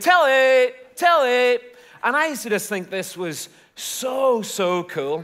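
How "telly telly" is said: put-on thick Belfast accent, loud, high yell. Retelling how young people shouted in the streets of Belfast, in a thick Belfast shout. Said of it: "young people shouting".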